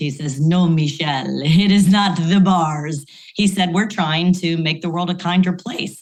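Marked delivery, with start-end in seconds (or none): 0.4-3.0 put-on beautiful, unhurried, slow European accent. Business school professor retells Juan answering her question about sales: imitating Juan's European accent. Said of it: "he's got this beautiful European accent".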